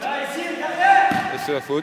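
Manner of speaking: high, slow, stretched commentator voice.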